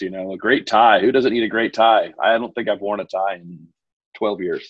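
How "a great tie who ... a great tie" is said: dry, sarcastic delivery. Answering a question about a favorite Father's Day gift: sarcastic. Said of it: "I think I'm hearing some sarcasm".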